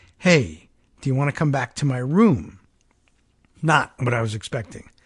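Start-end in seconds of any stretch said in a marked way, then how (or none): 0.2-2.6 secretive, conspiratorial whisper-like tone. Retelling what a woman asked near the end of a shift, retelling a conspiratorial tone. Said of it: "in a conspiratorial tone asked me".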